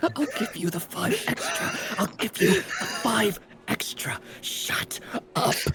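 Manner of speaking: hushed aside, very slow, deliberate, drawn-out whisper. Playing a character, speaking to another character during a conversation: whispering. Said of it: "whispering to you".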